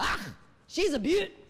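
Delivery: put-on Scottish accent. Retelling what a little man said about the guitar: put-on Scottish accent. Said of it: "a wee little Scottish guy".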